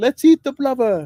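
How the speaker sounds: yelling at top volume. Shouting to be heard over loud rain while acting out a scene with others, screaming. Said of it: "I'm screaming because the rain is just so noisy".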